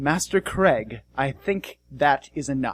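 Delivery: very calm, settled, composed voice. A man comes around the corner and speaks to master craig, very calm voice. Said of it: "says in a very calm voice".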